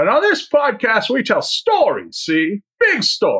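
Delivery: put-on high-pitched, swooping, old-movie style voice. Podcast co-host introduces the show doing a Jimmy Stewart impression. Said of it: "I guess that's your Jimmy Stewart impression?".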